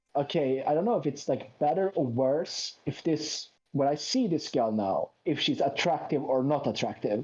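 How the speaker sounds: ordinary delivery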